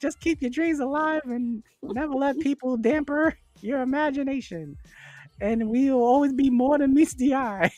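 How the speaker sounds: high robot voice. Giving a shout-out to Adrian in a Bumblebee voice. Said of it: "That's definitely what Bumblebee would sound like".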